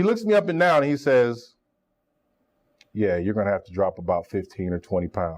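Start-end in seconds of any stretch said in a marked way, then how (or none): 2.9-5.4 deep, blunt, gruff monotone, very low and flat. Retelling the coach's first words to him: imitating Stump Mitchell's gruff flat tone. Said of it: "but really gruff".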